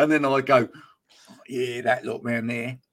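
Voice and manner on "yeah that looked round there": put-on Mackem accent from Sunderland. Passing round the stadium, speaker retells what he said in his best Mackem accent. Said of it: "trying to put on my best Macam accent".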